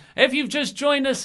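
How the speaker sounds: very high-pitched wrestling announcer voice. Imagining the show's opening call: Tony Schiavone voice. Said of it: "Tony Schiavone's voice saying".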